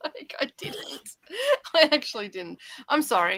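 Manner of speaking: giggling voice, high and swooping. Apologizing to another speaker mid-conversation, laughing while talking. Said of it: "I'll stop laughing at your expense now".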